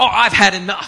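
acted indignant outburst. Retelling how a diner got up at the table: imitating an angry woman. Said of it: "she gets so angry".

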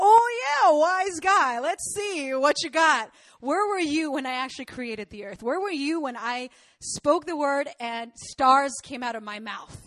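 put-on dry, needling, taunting wise-guy sarcasm. Paraphrasing God's answer to Job in a sarcastic God voice. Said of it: "God is basically being sarcastic here".

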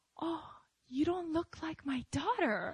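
stunned, taken-aback, shocked tone. Retelling the first thing a mother said on seeing her child: imitating someone shocked. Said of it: "she was just so shocked".

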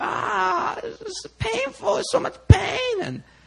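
very high, very slow sobbing, crying in pain. Retelling her stomach pain episode, imitating her crying in pain. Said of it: "And she's just crying and just like".

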